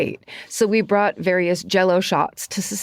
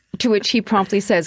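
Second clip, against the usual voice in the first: usual speaking voice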